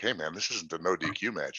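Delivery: hushed, sidelong aside muttered under the breath. A wrestler retells what the ref said to his opponent, imitating muttering under breath. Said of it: "kind of like under his breath".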